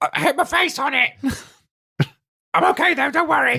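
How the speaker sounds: put-on weird goblin accent, very high. Voicing a goblin character in a group scene, goblin accent. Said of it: "The accent changes the more I get into Goblin".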